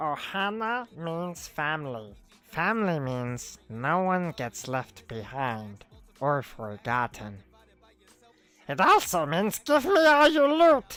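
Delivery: loud, swooping cartoon alien voice. While going through your hits and showing off the finds, do a Stitch impression. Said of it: "It's my Stitch impression".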